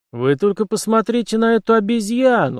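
scornful mocking voice. A young man comments on a girl's arrival in a café, contemptuous. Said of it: "презрительно прокомментировал".

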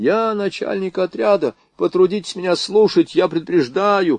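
high, snooty, self-important, teasing mock voice. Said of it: "передразнивала Варя Романовского".

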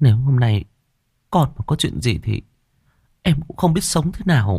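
high, quavering voice breaking mid-phrase, halting. A wife looks at her husband and speaks, in a trembling voice. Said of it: "giọng run rẩy".

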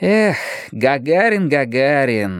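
long, reproachful, drawn-out drawl with a sigh. The narrator answers a companion offering to prepare things, reproachful drawl. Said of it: "сукаризной протянул я".

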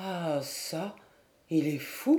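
faltering, stuttering, stammering speech. A man watching another cry out as if in a nightmare, stammering. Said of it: "balbutia Hervé".

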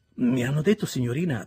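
awkward, self-conscious tone. The narrator answers a lady who asked to see him, rather embarrassed. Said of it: "disse io piuttosto imbarazzato".

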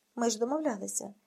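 ordinary delivery, nothing marked

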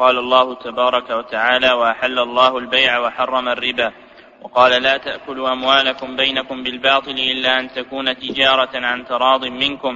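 plain

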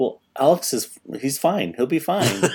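mock-deadpan, flat delivery. Retelling a scene where Jen answers Elise and Steven, imitating a deadpan delivery. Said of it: "kind of deadpan just goes".

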